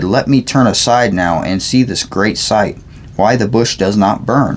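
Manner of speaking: ordinary delivery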